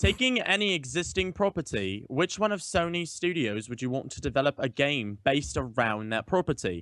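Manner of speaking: put-on English accent, British. Reading out the second topic of the night in a british accent. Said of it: "I'm going to read mine in a British accent".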